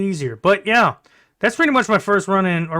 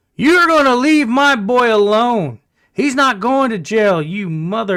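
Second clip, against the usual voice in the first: faint, slurred put-on drunk voice, ranting; 4 semitones higher, 4 dB louder than usual. Recounting a woman yelling at police to leave her boy alone, imitating a faint drunken voice. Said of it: "faint, drunken, stupid voice come out and go".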